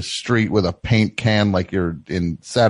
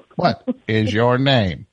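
acted robotic automated system voice; 3 semitones higher than usual. Playing a bank's phone robot in a skit with a caller: playing a phone robot. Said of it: "what you'd say to the robot".

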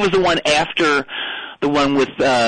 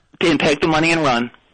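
ordinary talk, nothing marked

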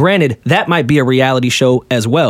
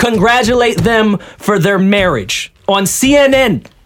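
firm, adamant, insistent, slow and pitched up; 7 semitones higher than usual. Arguing a point with the other speakers: adamant voice. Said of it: "That was [name]'s adamant voice".

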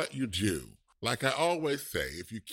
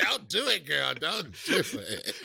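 mock yelling, pleading, with roughened voice; 3 semitones higher than usual. Recapping a show, the speaker re-enacts yelling at the TV: mock-yelling at the TV. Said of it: "I'm yelling at the TV".

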